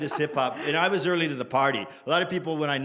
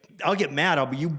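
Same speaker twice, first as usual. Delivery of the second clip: ordinary talk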